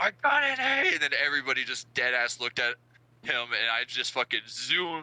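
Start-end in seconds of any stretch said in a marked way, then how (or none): 0.0-0.9 acted, very high, shrill, loud shrieked scream. Retelling how a classmate reacted in the hallway: imitating someone screaming. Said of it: "fucking screams, like".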